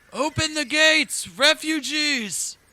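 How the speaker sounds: very high, very loud, distant-sounding shout. A game narrator voices someone in a tower over the road, calling out from afar. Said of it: "you can hear a call out".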